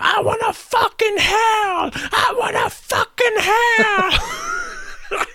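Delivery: mock screaming, very high-pitched and stretched out. Retelling how a club member arrived at the club: imitating someone screaming. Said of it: "just screaming as soon as he got in there".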